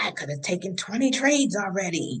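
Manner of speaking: muttered, under-the-breath half-whisper. Describing Reckless Ricky's habits, the speaker does a Reckless Ricky under-breath half-whisper. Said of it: "He whispers things like under his breath".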